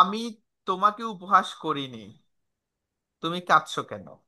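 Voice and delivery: normal talking voice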